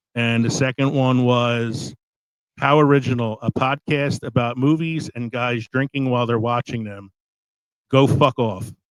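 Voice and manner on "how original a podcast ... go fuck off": normal talking voice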